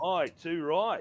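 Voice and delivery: clumsy put-on Australian accent, loud and high. Joking about an Australian actor hired to play Bond, bad Australian accent. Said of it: "My accents are really bad".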